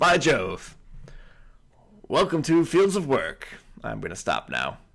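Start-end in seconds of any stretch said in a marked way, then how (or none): 0.0-3.5 put-on old-time 1920s radio announcer voice, higher pitch. Opening the episode while greeting the co-host: 1920s radio voice. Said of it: "Is that your 1920s radio voice?".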